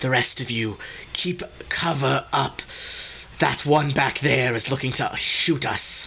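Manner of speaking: thin wisp of an airy voice. The narrator voices an acolyte speaking to the rest of the party, wispy voice. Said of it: "kind of in a in a wispy voice".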